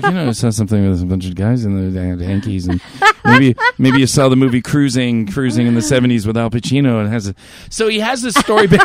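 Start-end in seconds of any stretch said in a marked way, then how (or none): 0.0-7.4 subdued, restrained tone with excitement kept down. Retelling a listener's story message: imitating a subdued hushed voice. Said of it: "he's talking in this voice that he doesn't wanna get too excited".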